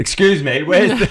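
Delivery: loud, shrill voice. Telling how a fellow athlete asked a local in Germany for directions, retelling a raised voice. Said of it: "So he raised his voice".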